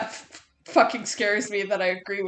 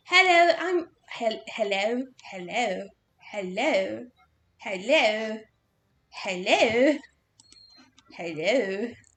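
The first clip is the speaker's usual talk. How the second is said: put-on British accent, repeated over and over. The speaker says hello over and over, in a put-on British voice. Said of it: "saying oh, hello over and over in a British voice".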